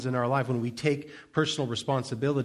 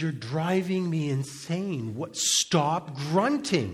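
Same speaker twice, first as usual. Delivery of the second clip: mock angry dad voice, scolding tone, very slow; 3 semitones higher than usual. Retelling a childhood story where his dad gets mad: imitating an angry dad. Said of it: "my dad's getting mad".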